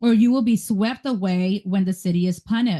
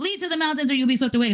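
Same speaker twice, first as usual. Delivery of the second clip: acted-out scream, rushed, high and urgent; 5 semitones higher than usual. Retelling a story, acting out one of them screaming a warning. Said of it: "And he's like screaming this".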